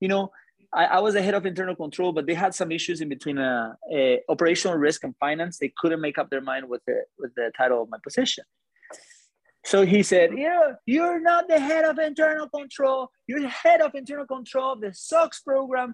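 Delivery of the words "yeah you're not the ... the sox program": flipping out, furious, voice very high. Retelling how an executive flipped out at the speaker: imitating someone flipping out. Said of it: "just flipping on me".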